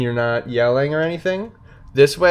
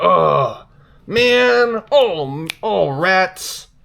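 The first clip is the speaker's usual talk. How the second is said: high, very slow, exasperated, let-down frustration; 7 semitones higher than usual. Showing what frustration sounds like: frustrated. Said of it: "Frustration is like".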